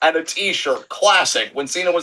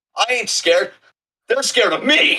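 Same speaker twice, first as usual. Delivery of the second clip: swaggering, cocky, hyped-up voice, pitched up; 5 semitones higher than usual. Imitating a wrestler hyping himself up at the mirror: mock cocky self-pep talk. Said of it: "hyping himself at the mirror".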